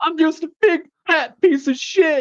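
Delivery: very high-pitched blubbering, sobbing cry. Retelling footage of Vader losing a match: imitating Vader crying. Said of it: "losing a match and he's, like, crying?".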